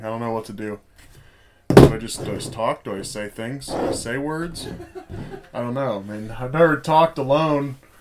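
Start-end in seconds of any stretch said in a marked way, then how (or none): none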